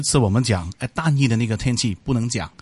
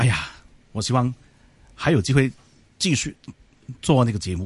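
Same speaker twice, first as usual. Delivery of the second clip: halting voice, catching and breaking mid-phrase, choked up. Asked by the host for some words to the listeners, answering while choking up. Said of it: "你是哽咽了吗？".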